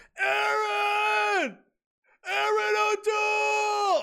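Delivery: very high, drawn-out shout. Acting out banging on a door like Wayne's World, shouting like Wayne's World. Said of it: "Bang on the doors like Wayne's World?".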